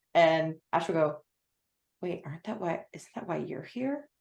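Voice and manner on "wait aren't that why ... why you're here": very soft, hushed murmur under the breath. Voicing a character leaning toward another, said under their breath. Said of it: "under their breath to Julian".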